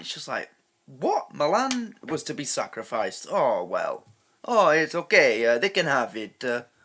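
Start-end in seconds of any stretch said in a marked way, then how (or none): 3.3-6.4 loud, badly done put-on fake Italian accent. Voicing Italians shrugging off the loss of Milan, in a bad Italian impression. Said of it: "sorry for the bad impression of an Italian".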